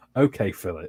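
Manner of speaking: play-acted, deeply let-down, very disappointed tone. Retelling how his doctor answered him, imitating a very disappointed voice. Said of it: "very disappointed voice".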